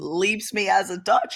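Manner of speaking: cracking voice, pitching up mid-line. Talking about their own politics, the speaker's voice cracks. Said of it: "Voice crack".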